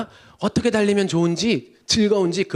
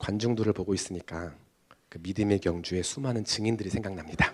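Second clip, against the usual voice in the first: very calm, very soft, hushed tone; 10 semitones lower, 10 dB quieter than usual. Retelling a friend's answer at a packed stadium: imitating 병역's very calm tone. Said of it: "매우 침착한 톤으로 약간의 성대모사를 하자면".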